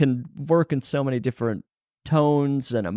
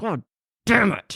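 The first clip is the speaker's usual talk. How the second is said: through gritted, clenched teeth, pitched up; 7 semitones higher than usual. Redoing a take, the speaker tries the curse again through clenched teeth. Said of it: "I love a clenched teeth".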